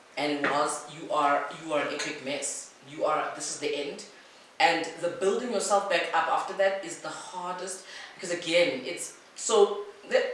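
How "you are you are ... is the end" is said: ordinary talk, nothing marked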